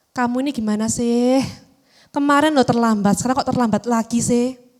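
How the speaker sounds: soft, gentle, sad pleading tone. Showing how to speak to a child who is late again: soft, sad, pleading tone. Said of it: "Nada suaranya memelas, halus, sedih".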